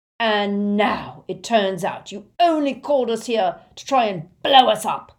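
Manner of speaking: roaring, bellowed out. A Death Eater confronts a sobbing man, roaring. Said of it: "roared the Death Eater".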